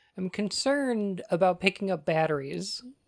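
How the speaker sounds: plain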